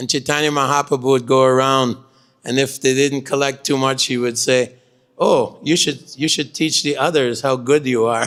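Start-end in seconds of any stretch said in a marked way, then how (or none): 5.2-8.3 put-on sarcastic tone. Retelling a remark to devotees who collected little dirt: imitating a sarcastic remark. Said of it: "He was very sarcastic".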